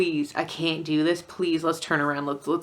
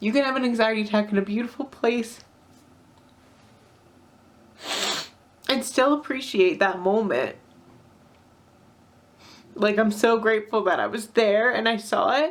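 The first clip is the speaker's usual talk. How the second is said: high, tearful voice, speaking while crying; 5 semitones higher than usual. Reflecting on an anxiety attack in a beautiful place, crying. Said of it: "I'm crying again".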